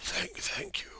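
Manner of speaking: weak, faint, barely-there whisper. In a game, the weak knight thanks his rescuer, in a weak whisper. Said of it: "He whispers".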